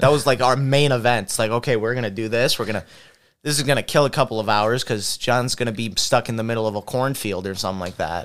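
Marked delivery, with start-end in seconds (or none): none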